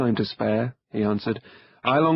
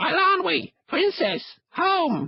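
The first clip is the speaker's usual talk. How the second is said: loud, very high crow squawk at full voice. The crow Kor calls out as he lands on Taran's wrist, croaking at top of voice. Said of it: "The crow beat his wings, clacked his beak, and began squawking loudly, even before he landed on [name]'s outstretched wrist. "[name]!" [name] croaked at the top of his voice. / The crow beat his wings".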